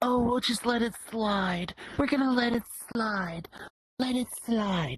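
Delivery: very high, mocking, dim-witted taunting voice. Ranting about people who keep letting things slide, in a mocking voice. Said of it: "I don't know how I did that voice".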